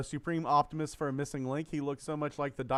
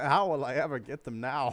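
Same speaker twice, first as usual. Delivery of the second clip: put-on amused voice through a little chuckle. Retelling a film villain's line, imitating a chuckling delivery.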